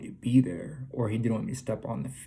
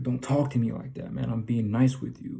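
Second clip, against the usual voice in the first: put-on angry delivery. Retelling own reply after getting angry: retelling own angry words. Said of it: "I got pissed off".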